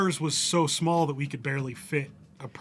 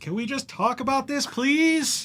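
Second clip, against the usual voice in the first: very high-pitched, pleading scream; 11 semitones higher, 3 dB louder than usual. Player describing their character's action in a game, screaming. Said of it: "and I'll scream out".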